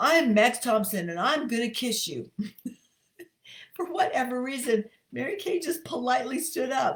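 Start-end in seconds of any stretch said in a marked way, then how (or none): 0.0-2.3 put-on strong, robust voice. Retelling his dad introducing himself to a woman, imitating Max Thompson's strong voice. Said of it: "in his strong, robust voice".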